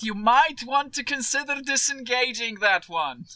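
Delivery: voice called across a distance. Playing a character who yells a warning towards the guard: yelling at a guard. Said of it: "Try yells towards the guard".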